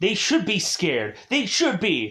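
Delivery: really angry and upset, swooping high. Critiquing flat movie dialogue, showing how the character's line should sound: angry and upset. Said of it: "really angry and upset".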